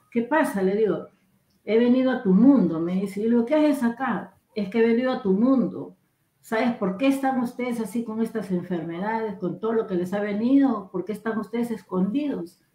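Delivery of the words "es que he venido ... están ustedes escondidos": usual speaking voice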